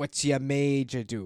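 bad, hacky, very broad put-on Boston accent. Quoting a movie line while discussing its accent, in a broad boston accent. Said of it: "His Boston accent is, like, kind of hacky".

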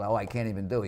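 ordinary talk

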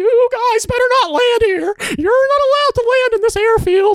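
very high, furious squeaking cartoon voice, South African accent. Speaking from a control tower during a coup, in a South African angry Mickey Mouse voice. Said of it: "South African version of angry Mickey Mouse voice".

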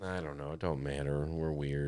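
sad, depressed tone, low and soft. A co-host talking on the episode, sounding sad and depressed. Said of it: "You sound all sad and depressed".

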